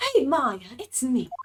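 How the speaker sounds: put-on British accent. Acting out a phone call, Mia greets Maya in Mia's British accent. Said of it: "Mia has a British accent".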